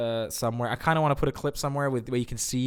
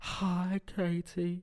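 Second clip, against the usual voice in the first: creepy, unsettling, pitched-up little voice; 6 semitones higher, 6 dB quieter than usual. Mocking an actor's creepy film character: imitating a creepy character. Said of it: "he's like".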